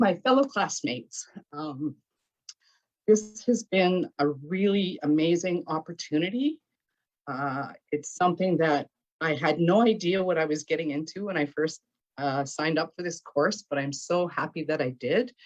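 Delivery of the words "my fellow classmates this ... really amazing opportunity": choked-up, emotional voice, catching in the throat. Thanking the elder and classmates at the end of a course, choked up. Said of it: "I'm getting a little choked up".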